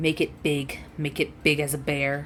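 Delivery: speaking in a growl. Game master voicing something growling inside a player's head: growling voice. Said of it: "You hear a growl come from inside of your head as it says".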